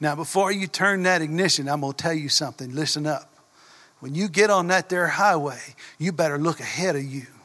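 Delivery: put-on heavy, deep, drawling Southern accent. Retelling what a driving teacher told the students in the car: deep drawling accent. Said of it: "in deep accent".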